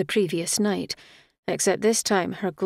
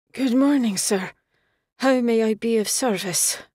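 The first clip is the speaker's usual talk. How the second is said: put-on drunk, slurred words; 4 semitones higher, 3 dB louder than usual. Reading a staggering man's greeting to Egan, drunk, slurred words. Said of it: "his words slurred".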